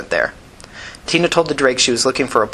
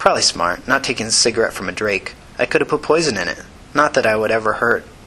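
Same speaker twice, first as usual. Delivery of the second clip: plain reading voice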